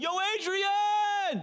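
very high, loud screaming call. Retelling a movie's last scene, the boxer calls for his girl: screaming like Sylvester Stallone. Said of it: "And he's screaming for his girl".

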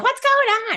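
very high, loud yell. Retelling how mom yelled up to the kids, imitating mom yelling. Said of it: "mom would yell up to us".

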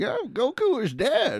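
very high, swooping, drawn-out voice. Asked for a best Roshi, imitating him: Roshi impression. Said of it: "That's a really good Roshi".

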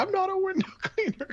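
piercing high-pitched yell. Recounting a scene from a tv episode, retelling the character's yell. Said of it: "and he's just yelling".

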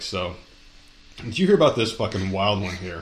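words broken up by laughter. One host brings up a wild story to the other, laughing while talking. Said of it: "You couldn't even say that without laughing".

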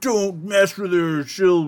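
high, drawn-out, ranting half-yell. Mocking a man yelling exposition about Katana at the others, mock yelling. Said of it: "he's like yelling this exposition".

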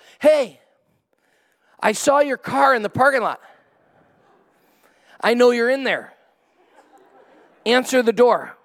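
mock yelling, high, hollering, insistent. Retelling how the neighbor knocked again at the door: imitating a neighbor yelling. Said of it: "and he yells".

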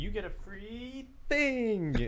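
very slow, very high-pitched, play-acted sarcastic tone. Retelling what a woman said as she reached up, imitating someone's sarcasm. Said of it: "Like she was sarcastic about it".

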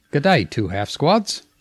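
put-on, rough-and-ready Australian accent. Reading a passage aloud on request, Australian accent reading. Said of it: "I think you should read it in an Australian accent".

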